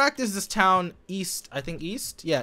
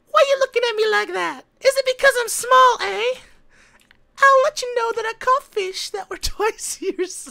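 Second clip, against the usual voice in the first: put-on very high, loud, babyish voice; 8 dB louder than usual. Reading a character's lines aloud, the speaker uses a baby voice. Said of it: "I want to read the baby voice".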